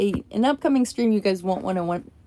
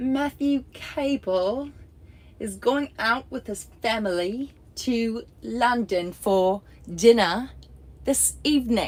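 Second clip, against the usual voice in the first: clumsy, bad fake British accent; 3 semitones higher than usual. Streamer trying to say a sentence about a friend's london trip, in a bad british accent. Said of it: "Let me summon up all my British accent strength".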